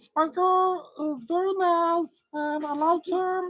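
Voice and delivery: very high-pitched, squeaky voice. Asked to do it before going live, the speaker answers in the Elmo voice. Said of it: "but if you do the Elmo voice".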